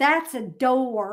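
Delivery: put-on heavily enunciated Southern accent, "door" drawn out. Recalling people pointing at things for them to pronounce, heavily enunciated Southern accent. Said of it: "really enunciate my Southern accent".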